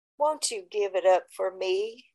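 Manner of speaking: soft, low, gentle and tender voice. Speaker recalls a man's request to them, imitating his tender voice. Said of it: "it would be a voice similar to this".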